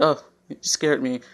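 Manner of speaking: usual speaking voice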